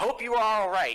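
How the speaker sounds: very high, passing yell. Running past a doorway in character, yelling to a lady being choked: yelling.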